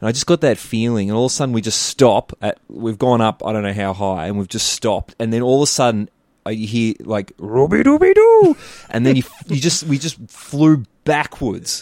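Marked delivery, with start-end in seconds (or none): 7.4-8.6 very high, loud cartoon-dog yell. Retelling a ride where a recorded voice yells: Scooby-Doo yelling. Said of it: "Scooby-Doo's, like, yelling".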